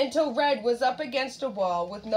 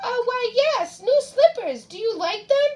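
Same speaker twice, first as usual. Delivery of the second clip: very high-pitched, fake, put-on grandma voice; 13 semitones higher, 4 dB louder than usual. Narrator reads the wolf answering Red from the bed, in a high-pitched voice. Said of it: "said in a high-pitched voice".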